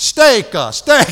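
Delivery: loud, choppy, stilted put-on broken English. Retelling ordering food when he walked over, in a stilted broken-english voice. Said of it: "I said it like that".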